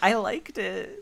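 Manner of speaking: soft, small, little schoolgirl voice. Quoting Annie's reaction to the movie: Annie's little schoolgirl way. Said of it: "that little schoolgirl way".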